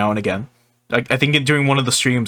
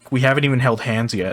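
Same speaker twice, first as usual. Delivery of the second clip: ordinary talk, nothing marked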